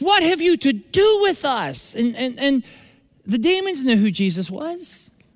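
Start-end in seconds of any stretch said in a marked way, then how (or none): 0.0-1.9 high, screeching demon voice. Speaker telling of a demon who came to church: screeching demon voice. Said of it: "he screeches".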